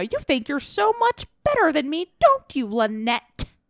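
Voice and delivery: angry yelling, like an angry bird. Recalling a scene where Nora yells at Lynette, do a Nora yelling impression, like an angry bird. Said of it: "That's my Nora impression".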